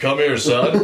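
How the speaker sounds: faked, low, deep fatherly dad voice. Playing a dad with a painted-on beard, in a deep dad voice. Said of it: "use your dad voice".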